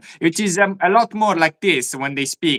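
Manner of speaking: typical, everyday Italian speaker's accent. Explaining he is from Italy but lacks the accent, demonstrating a typical Italian accent. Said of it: "I do not have a typical Italian accent".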